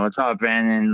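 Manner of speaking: plain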